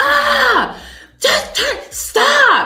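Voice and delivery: very high, very loud, very slow, shrill sudden yell. Retelling how p snapped at the speaker out of nowhere, imitating the sudden yell. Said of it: "She just like yells at me out of nowhere".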